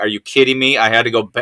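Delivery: ordinary talk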